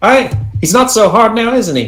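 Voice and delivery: put-on very high, taunting Scottish accent. Voicing Anne popping up over his shoulder after the first hit: Scottish accent. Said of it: "I'm speaking in a Scottish fucking accent".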